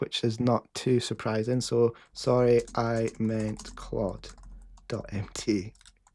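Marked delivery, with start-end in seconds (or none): 2.1-5.7 slow, careful, deliberate dictation delivery. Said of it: "it doesn't understand my accent".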